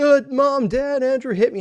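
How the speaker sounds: put-on, very high, screamed voice. Retelling a younger brother faking an injury to parents: imitating brother screaming. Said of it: "start screaming and saying".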